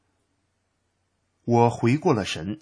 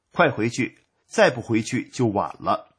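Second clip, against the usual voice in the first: ordinary delivery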